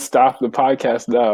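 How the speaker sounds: normal talking voice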